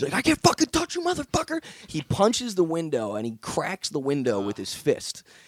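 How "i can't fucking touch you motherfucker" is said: mock enraged screaming, very high pitched. Retelling how an attacker screamed while kicking the car door: imitating someone screaming. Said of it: "He's screaming".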